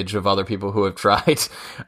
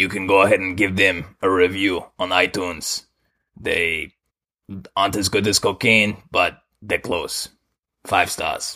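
put-on Colombian accent. Asked to do a nice Colombian accent, playing Pablo Escobar: Pablo Escobar Colombian accent. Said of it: "Do a nice Colombian accent".

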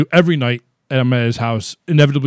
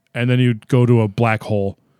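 ordinary talk, nothing marked

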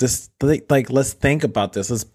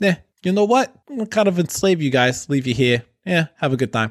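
put-on Brooklyn accent, higher pitch; 5 semitones higher than usual. Retelling Columbus's voyage, the speaker quotes him: Columbus with Brooklyn accent. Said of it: "Columbus with his Brooklyn accent".

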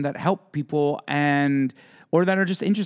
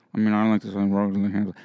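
put-on muttering under the breath, pitched lower; 7 semitones lower than usual. Imitating Michael saying a line under his breath: imitating Michael muttering under his breath. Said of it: "under his breath".

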